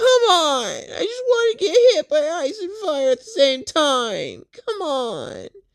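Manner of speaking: put-on very high, slow, swooping teary crying whine. Retelling a character's complaint in a fight: imitating someone whining. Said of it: "she starts whining and complaining".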